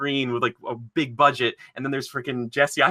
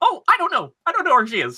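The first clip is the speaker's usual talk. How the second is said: very high voice, swooping in pitch; 4 dB louder than usual. Mocking a movie villain's line: Jesse Eisenberg as Lex Luthor impression. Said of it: "Jesse Eisenberg just going".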